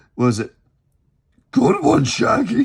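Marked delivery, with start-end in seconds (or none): 1.5-2.7 very high, rough, swooping put-on cartoon dog voice. Trying to do the voice, talking to Shaggy, in a put-on cartoon dog voice. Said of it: "I'm gonna try to do the voice".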